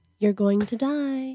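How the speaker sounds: eerie, creepy, ominous doom-laden delivery. Retelling what an uncle always said: imitating Uncle Pepe, creepy. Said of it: "And he'd say it like that".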